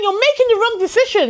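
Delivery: high-pitched, exasperated, frustrated yell. Retelling screaming at a book about a character's choices: imitating own screaming. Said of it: "I'm screaming at the book saying".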